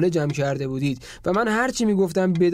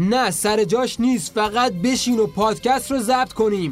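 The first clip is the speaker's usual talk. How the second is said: heated, emphatic outburst with words pushed out; 4 semitones higher than usual. Speaker urges the other person to sit down and record the podcast, yelling. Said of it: "داد نزن".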